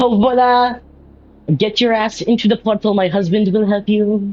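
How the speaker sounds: flamboyant, high character voice.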